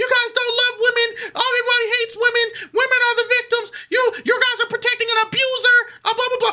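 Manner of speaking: crying rant, very high-pitched wail. Retelling how a woman reacted after being put in cuffs, imitating her crying. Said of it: "she started crying".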